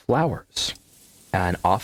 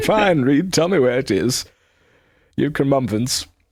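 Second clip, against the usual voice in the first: higher-pitched, reluctant, begrudging tone; 6 semitones higher, 4 dB louder than usual. Playing Mr. Tumnus answering Reed, the DM, in a game scene; begrudging. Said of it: "begrudgingly going".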